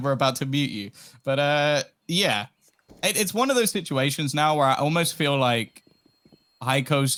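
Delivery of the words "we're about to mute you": usual speaking voice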